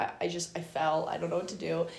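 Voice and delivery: ordinary talk, nothing marked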